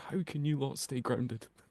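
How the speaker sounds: hushed half-whisper, under the breath. Picturing looking over at two others and asking under breath, half-whispering to oneself. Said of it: "I'm gonna like kind of whisper to myself".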